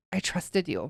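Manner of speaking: sobbing speech. Retelling what the speaker said back then, imitating past self sobbing. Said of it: "and so I'm like sobbing".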